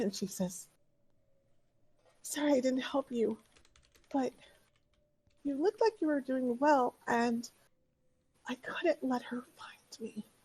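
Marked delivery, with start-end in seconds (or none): 2.2-10.3 put-on high-pitched, breathless, excited little girl voice. Voicing an excited little girl who greets the players: excited little girl, out of breath. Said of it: "out of breath, but not because she's been running".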